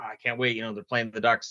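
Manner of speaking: normal talking voice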